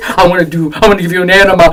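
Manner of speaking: imitated deadly serious tone. Retelling someone repeating a strange offer: imitating someone deadly serious. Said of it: "And he was really serious".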